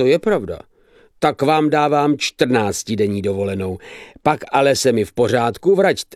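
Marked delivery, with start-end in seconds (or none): none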